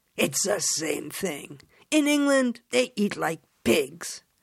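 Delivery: derisive, scornful scoff through a laugh. Replying to the narrator's comment, laughing scornfully. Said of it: "Michelle laughed scornfully".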